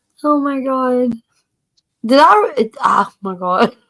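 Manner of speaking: talking while laughing, cracking up. Reacting to another speaker's joke about eating cigarette butts, laughing while talking. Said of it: "I'm still cracking up".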